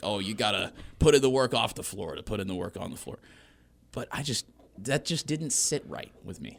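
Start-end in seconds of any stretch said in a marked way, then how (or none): 0.0-3.2 mock old man voice, lecturing tone. Speaker mocks how they sound talking about teammates, mock old-head lecture. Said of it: "I sound like an old head, just being like".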